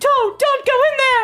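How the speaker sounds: put-on yelling. Retelling yelling at the screen like watching a horror movie: imitating yelling at a horror movie. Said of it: "like your mom watching a horror movie".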